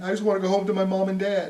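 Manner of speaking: put-on blubbering, sob-laden, tearful crying voice. Imitating jailed rioters crying about going home: imitating rioters crying. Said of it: "look at 'em now crying".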